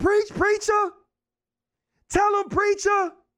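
screamed cheering, pitched way up, high and shrill. Retelling how an uncle ran through church: imitating someone screaming.

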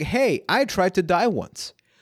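high, laughing delivery. Describing a past experience that still feels uncomfortable, said laughingly. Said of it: "I'm going to say it laughingly".

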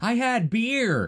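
mock very high-pitched hollered call. Retelling a man yelling in the background of a phone call, retelling a yell. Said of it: "he's yelling".

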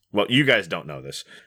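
usual speaking voice

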